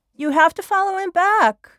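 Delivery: very high, moved, emotional, urging tone. Urging someone to follow a friend back, getting emotional. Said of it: "I'm getting emotional".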